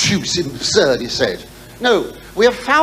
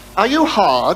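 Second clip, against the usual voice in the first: put-on very posh man's voice and accent. Retelling a phone call, quoting the man on the line, very posh voice. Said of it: "a man. Very posh, very posh".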